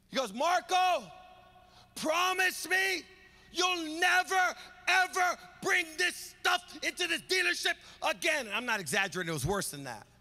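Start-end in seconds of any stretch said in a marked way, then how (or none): 0.4-8.5 high-pitched screaming with words dragged out slowly. Retelling how a man at work screamed at him: imitating a boss screaming. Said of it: "He is screaming".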